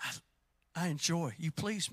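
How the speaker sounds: soft, hushed speaking voice. Imagining God speaking to someone on an afternoon: God's soft voice. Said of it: "that soft voice on a Tuesday afternoon".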